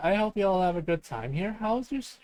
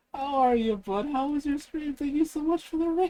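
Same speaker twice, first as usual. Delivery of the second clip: high voice, talking through laughter; 8 semitones higher than usual. Stream host greeting a viewer named Silver, laughing while talking. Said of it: "I'm laughing too much".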